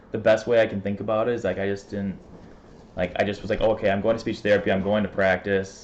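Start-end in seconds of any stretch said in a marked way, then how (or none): none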